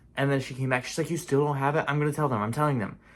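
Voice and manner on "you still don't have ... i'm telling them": frazzled, flustered, exasperated and frustrated tone. Retelling how someone came back about a missing meal: imitating someone flustered and frustrated. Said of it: "she was more flustered and frustrated".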